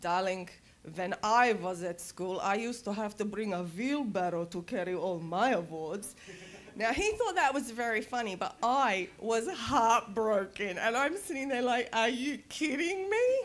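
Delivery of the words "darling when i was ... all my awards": put-on Serbian-accented speech. Retelling the father's reply, in his thick Serbian accent. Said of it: "my father had a beautiful Serbian accent".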